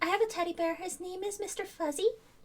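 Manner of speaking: put-on very high, very soft, hushed, eerie child voice. Doing a spooky bit while another speaker says they're creeped out: creepy little kid voice. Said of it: "me do the kid voice".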